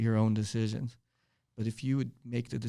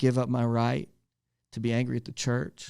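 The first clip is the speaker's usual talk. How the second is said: ordinary delivery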